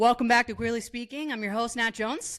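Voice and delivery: rapid-fire, rattled-off speech. Podcast host opening the episode, talking very fast. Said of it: "Why are you talking so fast?".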